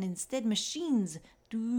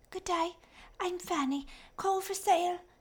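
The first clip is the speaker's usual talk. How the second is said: put-on thin, raspy, high-pitched child's voice; 9 semitones higher than usual. A young child with a coal bucket steps onto the train and calls out, thin raspy voice. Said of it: "she called in a thin and raspy voice".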